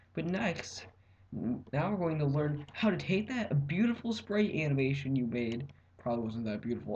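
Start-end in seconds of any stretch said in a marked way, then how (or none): none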